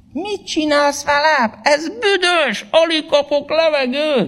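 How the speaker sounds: very high-pitched crying out. The plant cries out to the hand that sprayed it; crying out. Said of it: "kiáltotta".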